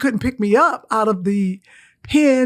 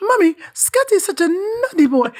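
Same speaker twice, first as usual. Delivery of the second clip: high child's voice with put-on British accent; 8 semitones higher than usual. Recalling speaking as a child after school abroad: put-on British accent. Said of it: "The British accent".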